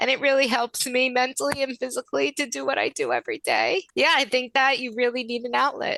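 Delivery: close to crying. Asked by the host to go first, a guest answers on the verge of tears. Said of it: "I'm gonna cry because I feel so passionate about it".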